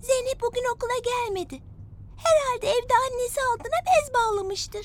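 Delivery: plain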